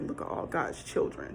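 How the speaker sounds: deep, breathy, hushed, taunting mock voice. Retelling how a man mocked people while scattering them outside, imitating a deep, mocking voice. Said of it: "he had like this really deep voice".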